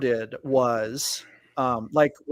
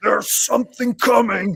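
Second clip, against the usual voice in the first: full-throated, high-pitched shouting; 7 semitones higher than usual. Voicing a character who spots danger and warns others: shouting. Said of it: "And then he kinda shouts".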